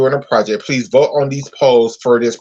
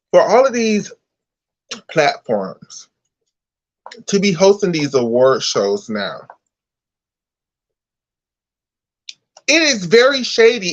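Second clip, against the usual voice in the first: angry, much higher pitch; 5 semitones higher than usual. Speaking out about other platforms hosting award shows, angry. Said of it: "I am so fucking pissed off right now".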